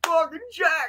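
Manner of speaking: very high, wild scream, hollered from afar. Recalling a big stranger walking up at him in a parking lot: retelling a scream. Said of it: "walking at me screaming".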